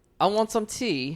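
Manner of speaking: very high-pitched, pleading, attempted British accent. Admitting they can't do accents, then trying one anyway: attempted british accent. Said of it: "What would my British accent be?".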